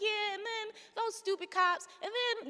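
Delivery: nonchalant breezy tone. Retelling how Pam Africa told a dramatic story: imitating someone nonchalant. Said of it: "talking about it like it's, like, nothing".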